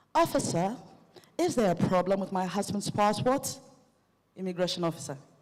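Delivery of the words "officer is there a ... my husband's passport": exaggerated put-on posh English accent. Knocking on the immigration booth, she addresses the officer in her most posh accent. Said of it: "said in my most posh".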